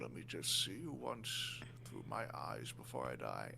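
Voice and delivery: dramatic, low, soft dying voice with gasping.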